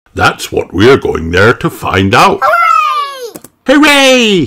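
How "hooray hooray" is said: very high, happy, joyful cheering. Narrator reads Peppa, told she'll be a zookeeper for the day: cheering. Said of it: "cheered Peppa".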